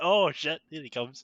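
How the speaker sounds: ordinary delivery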